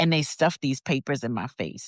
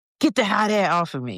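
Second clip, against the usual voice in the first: desperate yell, high-pitched; 5 semitones higher than usual. Retelling what he said in the car with the window down: imitating someone yelling. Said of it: "He's yelling".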